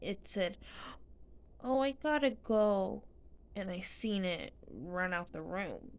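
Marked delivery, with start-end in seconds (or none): 1.6-3.0 put-on high, slow, loud, drawn-out babyish little-demon voice. Telling of a demon that ran out of the room, speaker quotes it: baby voice. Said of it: "in a baby voice".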